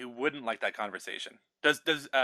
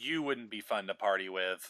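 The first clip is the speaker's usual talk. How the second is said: mock dismissive, slow, unimpressed tone; 7 semitones lower, 5 dB quieter than usual. Acting out how a date might have answered: imitating a dismissive tone.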